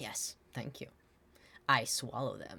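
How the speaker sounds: proud, self-assured tone. A character thanks someone for complimenting his swords, proud. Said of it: "stands up all proud and is like".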